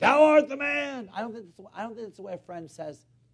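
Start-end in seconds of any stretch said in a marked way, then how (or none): 0.0-1.1 put-on thundering preacher voice. Acting out Nathan's accusation as people picture it: thundering Nathan pulpit voice. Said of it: "big and, you know, thundering and pounding a pulpit".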